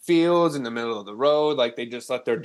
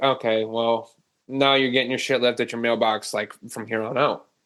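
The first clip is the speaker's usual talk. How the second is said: ordinary delivery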